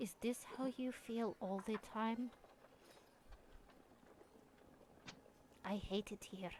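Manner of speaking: very quiet, hushed whisper. Voicing Storm whispering to Sam in character: quiet whisper. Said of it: "quietly whispers to Sam and goes".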